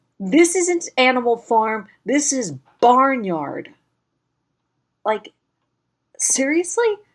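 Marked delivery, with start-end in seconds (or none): 0.2-3.7 imitated, exasperated, disbelieving screaming outburst. Retelling a former roommate's reaction to a trailer: imitating someone screaming. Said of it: "even she was screaming".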